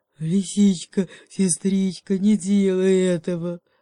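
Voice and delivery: shy, growly bear voice. Reading a fable, the bear answers the fox's threat with a timid bear growl. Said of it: "робко прорычал медведь".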